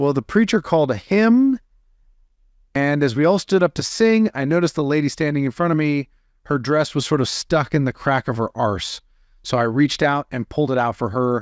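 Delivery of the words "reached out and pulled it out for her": ordinary talk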